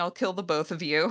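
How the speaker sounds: ordinary talk, nothing marked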